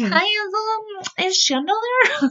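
very high put-on falsetto, disguised voice. Retelling her repeated phone calls to a house, imitating a disguised voice. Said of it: "she would disguise her voice to try to sound different".

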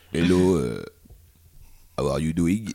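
broken English, barely speaking English. Acting out a new arrival at the bar who speaks no English: imitating a man who can't speak English. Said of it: "Tu le fais hyper bien".

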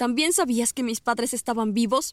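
plain

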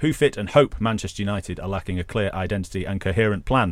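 ordinary talk

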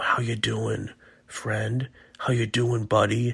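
low, whispery voice. Speaker showing listeners how to check in on someone, in a low whispery voice. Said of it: "in kind of a low whispery voice".

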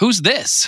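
very high-pitched, annoyed, pissed-off tone. Retelling how a client's wife walked in: imitating an angry wife. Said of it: "She's all pissed and shit".

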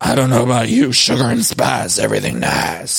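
dropping into a low register voice. Quoting the killer's tagline from the murder mystery finale: Deandra low voice. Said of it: "she was using a low voice like her tagline".

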